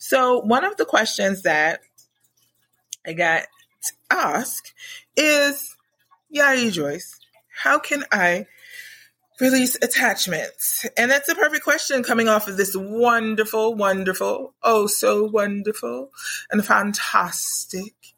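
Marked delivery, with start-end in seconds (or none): 12.8-17.9 grand, abundant-sounding put-on show voice. Answering a question about releasing attachments, in a put-on rich-and-abundant voice. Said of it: "That's my I'm rich and abundant voice".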